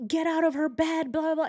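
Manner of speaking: high screaming outburst. Retelling a bunkmate waking up to a stranger: imitating someone screaming.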